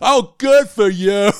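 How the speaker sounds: mock shrill, booming, very slow, drawn-out sarcastic sneer. Imitating a filmed rant: imitating a sarcastic tone. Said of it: "It just really sarcastic".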